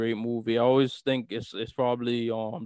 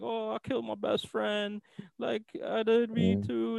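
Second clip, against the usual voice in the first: mock crying, fake tears, pitched higher; 11 semitones higher, 4 dB quieter than usual. Retelling a film scene of the killer talking to police: imitating fake crying. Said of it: "these crocodile tears".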